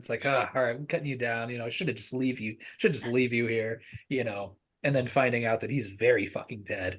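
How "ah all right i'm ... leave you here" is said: put-on sassy scolding voice. Retelling a movie scene where a character talks to a trapped man: imitating a sassy scolding. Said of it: "getting sassy with him".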